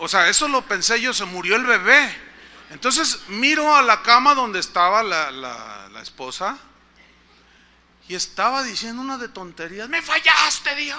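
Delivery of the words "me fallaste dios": put-on tearful crying yell, higher. Retelling how the wife cried out at God in the hospital: imitating someone crying and shouting. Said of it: "y lloraba y gritaba".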